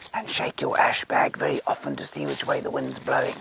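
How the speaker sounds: low, hushed whisper with voice dropped low. Showing how you talk when lion tracks feel fresh: voice dropped low. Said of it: "you then talk to talk like this".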